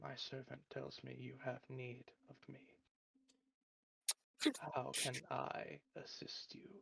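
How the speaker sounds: soft, altered, wholly different otherworldly voice. Game master voices a being speaking through Hope's lips to the players, in a very different voice. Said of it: "a very different voice speaks from his lips".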